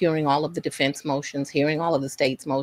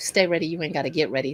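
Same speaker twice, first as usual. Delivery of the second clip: ordinary talk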